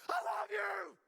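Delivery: furious, very loud, high, angry yelling at full volume. Mocking a guy who screams so much about love, mock-angry scream. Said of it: "why is he screaming so much about love? ... you don't sound like it".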